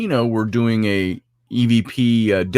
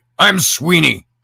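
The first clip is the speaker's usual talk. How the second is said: harsh, really rough ghost-recording voice, pitched up; 6 semitones higher than usual. Retelling a voice heard on a played-back recording, in a really rough voice. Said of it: "this really rough voice come across".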